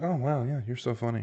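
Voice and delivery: sarcastic, insincere, plainly unamused tone. Mimicking what people say when something is not funny: mock unamused praise. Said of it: "what someone says when something's not funny".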